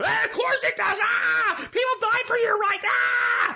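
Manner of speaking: acted very high, garbled, incoherent shrieking shout. Imitating an angry person insisting their vote matters: imitating someone screaming incoherently. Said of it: "now you're just screaming and you're being incoherent".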